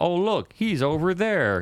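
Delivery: very high-pitched Southern drawl. Describing a scene, speaker quotes the robot character, Robo L southern drawl. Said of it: "in his southern drawers going".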